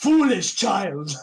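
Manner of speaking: menacing, loud, high-pitched intimidating shout. A tabletop player voicing their character, grabbing someone to intimidate him, intimidating. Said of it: "try and like gang intimidate this fucker".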